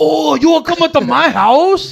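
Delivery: put-on Spanish accent. Mocking the other speaker's bit: put-on Spanish accent. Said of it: "You went Spanish again".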